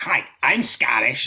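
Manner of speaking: generic put-on American accent. Scottish speaker imitates kids claiming to be Scottish, American accent. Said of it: "I'm going to do the American accent".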